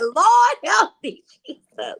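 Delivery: high, loud, tearful, wailing crying. Retelling a talk-show remark that upset her, imitating her own crying. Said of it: "crying like".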